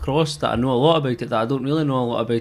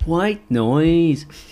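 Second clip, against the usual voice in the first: put-on Northern Irish accent, pitched up; 5 semitones higher, 4 dB louder than usual. Telling a story about laughing with Frank, quoting a remark: Northern Irish accent. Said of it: "like a Northern Irish accent".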